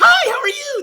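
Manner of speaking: very high, loud, crazy sugar-sweet voice. Showing how a caller's voice changes once the call connects, crazy high-pitched sugary voice. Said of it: "Like you have this crazy high-pitched sugar voice".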